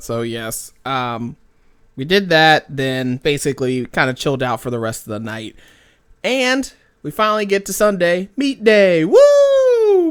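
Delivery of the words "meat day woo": loud sarcastic whoop, very high and swooping pitch. Announcing the day of a disappointing meet: sarcastic cheer. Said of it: "That is sarcasm".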